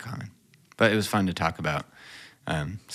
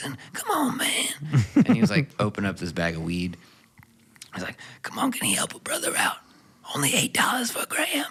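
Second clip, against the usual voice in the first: put-on voiceless, all-air talking with no voice; 7 semitones higher than usual. Recalling a guy with no voice who walked up to you; imitating a voiceless man. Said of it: "one of those guys that can only talk like this".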